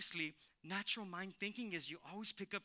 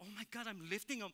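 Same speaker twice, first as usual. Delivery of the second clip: freaking out, pitched higher; 3 semitones higher than usual. Retelling lifting a motorcycle like a bicycle, retelling freaking out. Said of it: "I am freaking out like".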